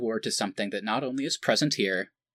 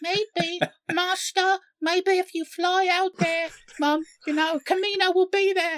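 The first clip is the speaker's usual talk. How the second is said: put-on very high, small child's voice; 4 dB louder than usual. Imagining a kid's voice reaching Rey as she lies dazed: child voice. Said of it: "you just hear a kid go".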